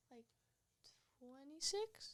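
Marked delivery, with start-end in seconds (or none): 1.2-2.1 very soft, quiet voice, pitched higher. Answering how many touchdowns thrown as a freshman: very quiet voice. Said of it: "She said that very quietly".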